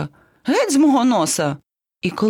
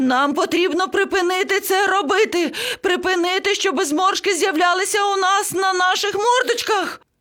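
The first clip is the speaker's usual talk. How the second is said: shrill squawking shriek, very high; 11 semitones higher than usual. The parrot addresses the baby elephant and the lion cub, yelling. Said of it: "зарепетував папуга".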